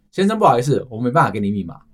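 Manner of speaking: plain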